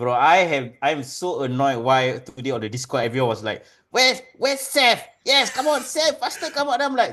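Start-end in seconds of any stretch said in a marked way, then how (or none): 3.9-6.8 very high, hyped wrestling-fan voice. Retelling what people in the Discord chat said about Seth: imitating wrestling fans in chat. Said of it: "is that your impression of the I W C?".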